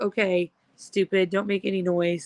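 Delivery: normal talking voice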